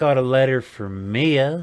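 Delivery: stronger put-on southern accent. Narrating a scene, voicing a group member who holds out a letter, more southern accent. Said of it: "in another more southern voice".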